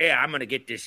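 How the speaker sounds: put-on Philadelphia accent. Imitating a Philly guy who moved the ladder: Philly accent. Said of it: "that's my Philly accent".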